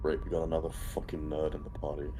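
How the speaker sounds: rushed, fast, hushed half-whisper. A player's character leans in to a party member, half-whispering. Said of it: "I lean in and I whisper to Elmara".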